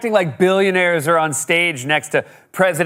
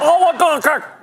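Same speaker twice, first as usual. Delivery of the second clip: very high mock Brooklyn accent on "oligarchy"; 10 semitones higher than usual. Joking about how Bernie says a word, in a Bernie Brooklyn-accent impression. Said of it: "the way Bernie says oligarchy in his Brooklyn accent".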